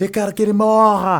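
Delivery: shrill, slow bellow at full force, drawn out. Retelling how the director yelled in the newsroom: imitating the director yelling. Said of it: "e ele berrava, berrava".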